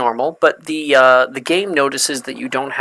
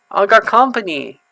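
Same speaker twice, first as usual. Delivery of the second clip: put-on baby voice, higher; 7 semitones higher than usual. In a detention scene, the speaker announces having company in a baby voice. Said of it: "Why did he say that like a baby?".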